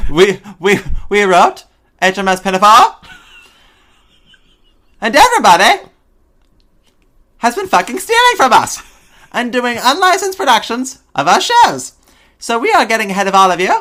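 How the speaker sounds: very loud, high, shrill, swooping cartoon-kid voice. The speaker acts out Gilbert and Sullivan speaking, in a Terrance and Phillip voice. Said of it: "the two kids from the Canadians from South Park?".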